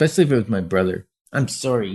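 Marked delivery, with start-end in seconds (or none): 1.3-2.0 put-on childish voice, quieter. Retelling being told to say sorry as a child: imitating own childhood apology. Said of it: "I'd put my face down so I didn't make eye contact and I'd go".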